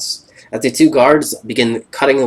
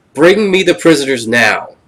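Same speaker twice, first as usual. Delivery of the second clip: furious, loud, angry scream; 3 semitones higher, 5 dB louder than usual. As the party escapes, voicing Will Riker in a very loud, angry scream. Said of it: "with a very loud and angry voice screaming".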